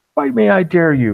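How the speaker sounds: very high, loud, shrill, drawn-out taunting shout. Taunting a six-legged beast in a fight: shouting a taunt in character. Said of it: "You all probably hear this shouting".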